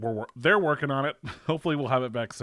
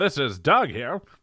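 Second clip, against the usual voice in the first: 1940s radio announcer voice, louder; 2 semitones higher, 5 dB louder than usual. Introducing doug to the group, speak in a 1940s radio announcer voice. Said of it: "nineteen forties radio".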